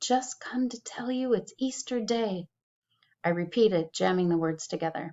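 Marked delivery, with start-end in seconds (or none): 0.0-2.5 high, soft, hushed, close half-whisper. Narrator reads the minister's wife leaning toward the girl: half-whispering. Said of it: "She whispered".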